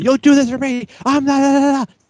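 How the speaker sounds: very high, angry, blaming yell, acted out. Retelling a wrestling segment, imitating Dolph Ziggler yelling. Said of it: "he's yelling at her like it's her fault".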